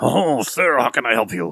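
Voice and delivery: smooth, suave put-on French accent, imp voice. Voicing a suave-looking imp greeting a player: suave French imp voice. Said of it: "suave-looking imp comes up and goes".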